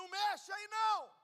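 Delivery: high, loud, shouting devil voice.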